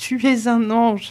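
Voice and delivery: high, slow outcry, lingering on each word. The cousin, kissing the sick woman's hands, cries out to her. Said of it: "s'écria la cousine".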